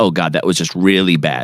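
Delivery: normal talking voice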